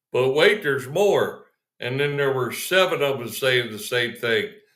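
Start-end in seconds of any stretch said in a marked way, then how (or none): 0.2-1.5 imitated announcer voice. Retelling a video where the announcer comes back on: imitating an announcer. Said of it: "the announcer comes back on and goes".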